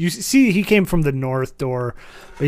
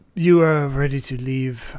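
put-on elderly butler voice. Voicing an old butler greeting the visitors at the door: old butler voice. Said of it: "butler comes out".

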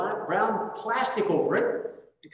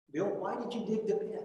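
mock steady, calm but firm, no-nonsense tone; 7 dB quieter than usual. Retelling what a feared teacher asked: imitating a calm but firm voice. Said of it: "she asked it again".

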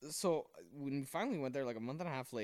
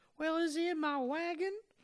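very high, loud, put-on little-boy Southern accent; 5 dB louder than usual. Telling a joke, the speaker voices the little boy: southern accent. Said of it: "now they both have southern accents".

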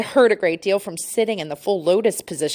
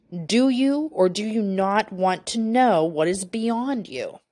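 slow, very stern, severe and commanding; 3 semitones higher than usual. Retelling a voice heard during meditation: imitating a booming, very stern voice. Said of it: "came to a booming voice. It said very sternly".

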